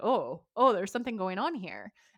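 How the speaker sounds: plain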